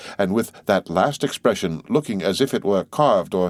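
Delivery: plain reading voice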